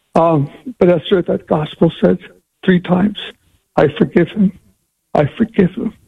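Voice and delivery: emotional choked voice. Recounting a gospel reading and a woman's forgiveness, choked up. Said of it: "sorry, I get a little emotional here".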